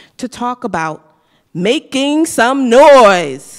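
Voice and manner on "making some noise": booming, very loud announcer voice, drawn out. Opening an event for a business school, in your best announcer voice. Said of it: "That's my best announcer voice".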